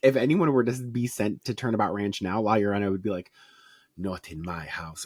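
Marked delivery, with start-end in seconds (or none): 4.0-5.0 put-on Russian accent, lower and quieter. Imagining what La Llorona would say if kids were sent to the ranch: La Llorona voice, Russian accent. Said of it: "know why she has a Russian accent".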